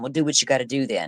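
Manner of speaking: mock angry voice. Describing questioning, the speaker quotes the man being questioned, imitating someone getting mad. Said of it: "he's getting mad and saying".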